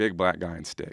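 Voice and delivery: put-on sobbing, crying speech. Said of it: "And I'm bawling".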